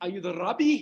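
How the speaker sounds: thick, heavy put-on Afrikaans accent. Rabbi retelling a man asking whether he is the rabbi, thick Afrikaans accent. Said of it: "A thick Afrikaans accent".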